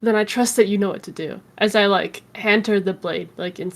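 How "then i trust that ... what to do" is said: acted whisper, lower and quieter. Voicing a character who passes a dagger to Gwen: whispering in character. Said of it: "And I'm gonna whisper to Gwen".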